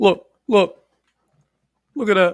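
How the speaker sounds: loud, high-pitched, pushy calling-out voice. Showing everyone the actual stone, done in Kevin Hart voice. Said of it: "in the voice of Kevin Hart".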